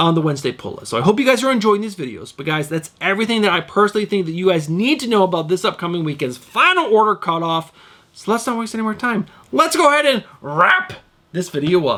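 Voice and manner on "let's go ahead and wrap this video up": voice breaks and cracks partway through. Host wrapping up a video when his voice cracks: voice cracking. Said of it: "Did you hear my voice crack right there?".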